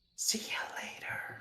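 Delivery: hushed, soft, breathy whisper, barely voiced. Saying goodbye in character to someone in a trance: whispering. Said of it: "I'll sort of whisper to him".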